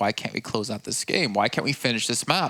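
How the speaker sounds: plain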